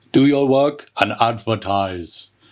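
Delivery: clumsy, poor, bad put-on German accent. Quoting a speech heard while working out, in a bad Arnold the Terminator impression. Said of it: "I'm not good at a German accent".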